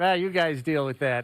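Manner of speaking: ordinary talk, nothing marked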